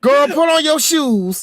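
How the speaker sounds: put-on thick, heavy Houston accent, laid on, pitched high. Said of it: "When she say shoes".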